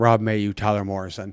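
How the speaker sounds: put-on muttering under breath.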